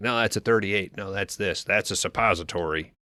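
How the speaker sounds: plain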